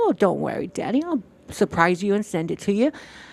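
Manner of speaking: cute little put-on voice. Retelling own past reply to him about sending snacks: imitating own past cute voice. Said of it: "and me as a cute little".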